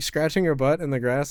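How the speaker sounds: usual speaking voice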